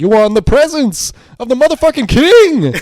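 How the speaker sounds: very loud, high, roaring bellow. Retelling a film's opening scene where he kicks open the door: Laurence Fishburne impression. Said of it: "Lawrence Fishburne is just absolutely eating his line delivery".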